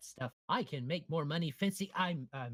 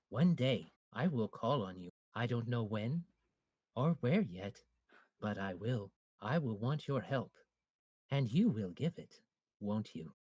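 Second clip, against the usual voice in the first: calm, understated, veiled, intimidating menace; 3 semitones lower than usual. Character speaks to a man while walking him out, nice and quiet. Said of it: "he's saying it nice and quiet".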